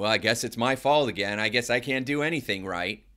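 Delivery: play-acted snide, appeasing, passive-aggressive sarcastic tone. Retelling a client's reply: imitating sarcastic placating tone. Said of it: "placater, sarcastic".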